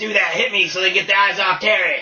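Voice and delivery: put-on sleazy talking voice. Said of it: "He probably was like".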